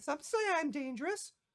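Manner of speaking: tiny, very high-pitched squeaky fairy-dragon voice. Voicing a small fairy dragon who greets a player: small fairy dragon voice. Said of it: "this fairyish small looking dragon".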